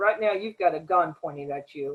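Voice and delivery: imitated whisper. Retelling what was whispered to a young man at gunpoint: retelling a whisper. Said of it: "I whispered to that young man".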